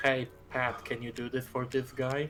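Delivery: normal talking voice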